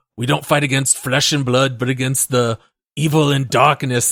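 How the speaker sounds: poor attempt at a Scottish accent. Quoting a game character's Bible line in an attempted Scottish accent. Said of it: "I cannot do a Scottish accent".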